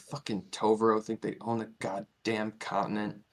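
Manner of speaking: barely audible, very hushed grumbling mutter under the breath. Voicing a guard muttering as he leaves after throwing food in. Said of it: "you kind of hear him mutter".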